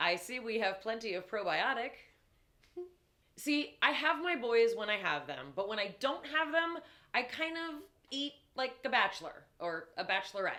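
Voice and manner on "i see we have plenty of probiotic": put-on, bone-dry, perfectly flat deadpan delivery. Retelling what the older son said at the open refrigerator: retelling a deadpan remark. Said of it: "perfectly deadpan".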